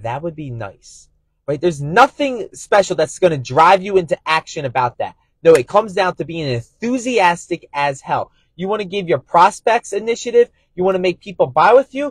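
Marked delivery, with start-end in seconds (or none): 0.0-1.1 very quiet, low, flat, even monotone. Speaker on enthusiasm showing the tone a prospect hears, flat monotone. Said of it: "this monotone tonality of".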